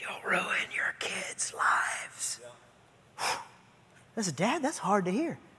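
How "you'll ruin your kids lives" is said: slow, drawn-out, breathy whisper. Speaker acting out what Satan whispers to him, Satan's whisper. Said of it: "Satan whispers".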